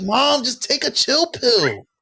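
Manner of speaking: very high, sing-song put-on voice.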